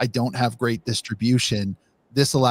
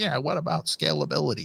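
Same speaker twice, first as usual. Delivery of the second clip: gravelly, creaky acted voice; 4 semitones higher, 5 dB quieter than usual. Imitating someone in the background asking about scalability: put-on voice of a background questioner. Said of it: "I love that voice".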